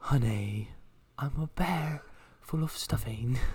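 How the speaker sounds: clumsy cartoon bear voice, bad Australian accent. Taking a turn at the voice after someone else tries, Winnie the Pooh impression. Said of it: "When did Winnie the Pooh move to Australia?".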